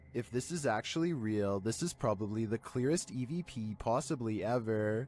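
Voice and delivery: plain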